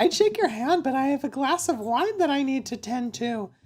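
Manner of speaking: very high puppet-pig voice, pitched way up. Narrating a story, voicing a woman greeting the new neighbor, in a Miss Piggy voice. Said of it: "I gave her like Miss Piggy voice".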